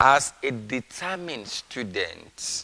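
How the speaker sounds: slow, weighted stress on the word determined.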